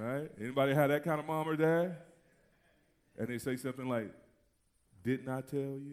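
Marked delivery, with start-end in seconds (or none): 5.0-5.9 quiet, slow delivery, lower and quieter. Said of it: "that tone".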